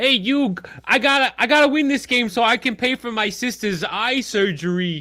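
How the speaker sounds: high, loud, exaggerated cartoon Brooklyn accent. Starting off a circle where everyone does their best one, do a Joey Wheeler impression, Brooklyn guy. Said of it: "He's the guy from Brooklyn".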